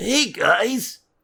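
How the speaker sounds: put-on very high young cartoon boy voice. Discussing a cartoon boy's voice with the others, demonstrating: Ash Ketchum voice. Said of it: "Is that how Ash sounds?".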